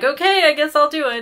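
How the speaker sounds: high, loud, mock yielding, giving-in tone.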